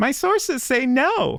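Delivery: very high-pitched, slow, drawn-out character voice. Reading out a magic ball answer: Paimon voice. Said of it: "That was my best Paimon voice".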